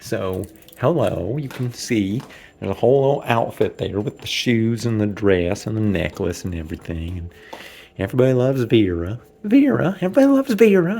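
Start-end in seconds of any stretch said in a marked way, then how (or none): 9.4-11.0 very high-pitched character voice, lifted way up. Actor in the dressing room before Act Two, demonstrating high-pitched Vera voice. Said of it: "Gotta get that voice up nice and high for Vera".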